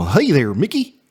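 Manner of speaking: stretched out, going in and out. Showing how a drawn-out voice turns into Goofy: Goofy voice. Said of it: "you start talking a lot like Goofy".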